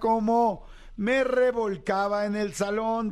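slow, drawn-out announcer voice.

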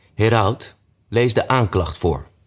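plain

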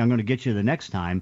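plain

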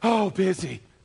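out-of-breath voice. Imitating someone asked how they are doing: imitating someone out of breath. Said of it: "why are you out of breath".

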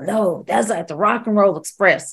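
put-on southern accent. Retelling what a wrestler said in a room: imitating Kid Cash. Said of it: "Why am I even doing that voice?".

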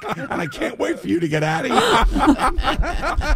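nasty, laughing, slow voice rising high.

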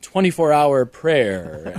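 very pious, slow intoning voice.

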